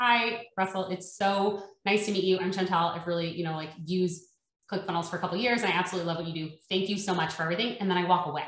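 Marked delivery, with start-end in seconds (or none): none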